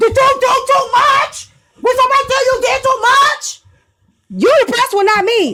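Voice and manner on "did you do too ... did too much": high-pitched screaming. Mocking how another speaker sounded on the phone: imitating someone screaming. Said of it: "when you screaming in the phone like this".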